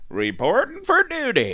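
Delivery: very high-pitched put-on American accent. Told to try an American accent, repeating the line in an American accent. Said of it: "You should do an American accent".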